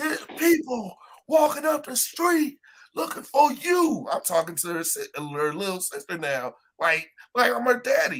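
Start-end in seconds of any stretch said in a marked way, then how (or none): 0.0-4.1 imitated shouting, higher. Retelling telling arguing girls to get in the car: retelling own yell. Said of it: "I'm tired yelling".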